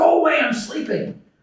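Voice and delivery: mock shouted voice. Retelling a parable, the sleeping judge opens the window: imitating a judge yelling. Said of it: "yells out".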